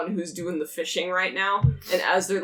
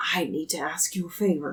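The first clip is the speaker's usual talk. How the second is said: muttered low and hushed under breath. Voicing a woman who leans in close to ask you a favor, under her breath. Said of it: "she leans in close to you and says it under her breath".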